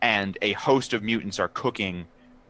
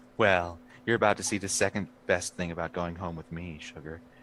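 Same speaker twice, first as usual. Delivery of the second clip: impression of a woman's voice; 2 semitones lower, 6 dB quieter than usual. Acting out a woman answering someone praising her breakfast, impression of a woman. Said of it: "great impression of a woman".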